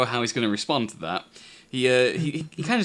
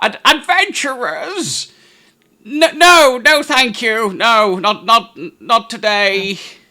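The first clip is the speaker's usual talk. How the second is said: put-on very high, very loud, slow old man voice; 9 semitones higher, 10 dB louder than usual. Voicing an old man with a long beard answering the door: old man voice. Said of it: "like his eyesight's not very good".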